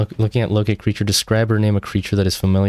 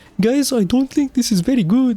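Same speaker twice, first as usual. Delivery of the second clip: over-the-top, exaggerated Indian accent, pitched very high. During a tabletop game, a player speaks in an exaggerated Indian accent. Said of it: "in a exaggerated Indian accent".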